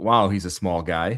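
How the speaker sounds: ordinary talk, nothing marked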